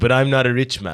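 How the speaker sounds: put-on light Caribbean accent. Retelling what a dealer's friend said on a bench: slight Caribbean accent. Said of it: "I'm doing a little bit of a Caribbean accent".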